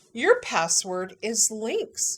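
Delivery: put-on, thick Southern Utah accent, drawn out. Retelling a woman telling her her dad's password, imitating her thick Southern Utah accent. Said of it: "she's got this thick Southern Utah accent".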